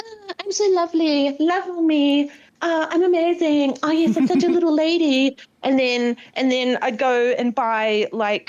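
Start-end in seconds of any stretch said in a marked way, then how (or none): 0.0-5.4 high, dainty, prissy, self-adoring little-princess voice. Voicing a cat described as a little princess: voicing the cat as a prissy little princess. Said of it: "She would be like".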